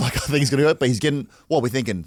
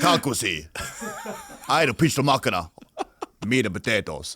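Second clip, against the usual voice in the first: Yugoslavian accent; 3 semitones lower, 3 dB quieter than usual. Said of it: "we speak with a thick accent".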